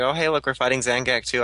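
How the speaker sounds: ordinary talk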